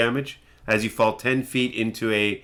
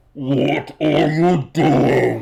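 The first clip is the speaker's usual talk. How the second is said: huge, booming, rough voice sounding from far away; 3 semitones higher, 5 dB louder than usual. A game master voicing a big unseen creature calling down the path, big booming voice. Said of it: "you hear in a booming voice".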